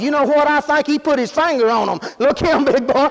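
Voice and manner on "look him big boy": ordinary talk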